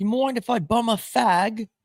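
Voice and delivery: put-on British accent, very high and drawn out. Joking about dating a woman with a British accent: put-on British accent. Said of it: "the British accent's kinda crazy on chicks".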